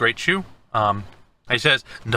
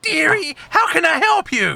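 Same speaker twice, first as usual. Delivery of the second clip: put-on very high old woman voice, not quavery; 3 dB louder than usual. In a role-play, greeting a traveler who approaches her: old woman voice. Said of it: "You are going to find an old woman".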